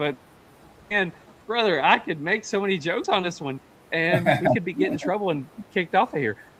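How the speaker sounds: high-pitched, laughing through the words, cracking up. Apologizing to another speaker for laughing during a question: laughing while talking. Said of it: "I am so sorry that I'm laughing".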